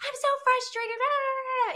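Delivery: put-on crying, worked-up, very high, tearful frustration. Retelling giving him an earful on the phone: imitating own tearful frustration. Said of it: "I'm probably crying at this point".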